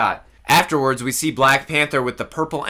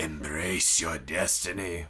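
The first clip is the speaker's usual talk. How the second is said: very low, soft, hushed voice; 9 semitones lower, 11 dB quieter than usual. Recapping a trailer, the speaker voices a character's line in the Snoke voice. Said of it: "he says in the Snoke voice".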